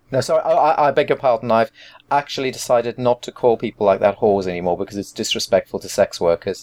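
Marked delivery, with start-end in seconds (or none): none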